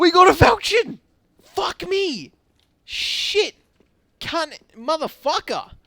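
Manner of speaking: very loud, very high, shrill thrilled excited shouting. Getting a rare Falchion drop in a game: excited shouting. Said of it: "No one getting excited".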